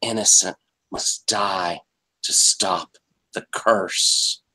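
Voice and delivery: soft, unhurried voice, quiet and slow. A character passing through turns to the sheriff and speaks in a quiet voice. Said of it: "in a kind of quiet voice".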